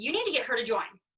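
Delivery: ordinary delivery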